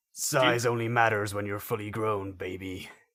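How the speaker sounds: put-on macho action-hero voice. Repeating a quiz quote to guess who said it: half-assed Duke Nukem impression. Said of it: "my half-assed impression and go with Duke".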